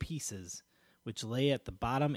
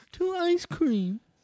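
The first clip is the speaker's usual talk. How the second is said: put-on, attempted woman's voice; 5 dB louder than usual. Taking turns doing voices for a toast, trying to speak like a woman. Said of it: "I'll try to speak like a woman".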